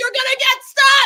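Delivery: mock shrill, very high, loud screamed yell. Retelling what they screamed at him while watching: imitating own screaming. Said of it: "screaming at him".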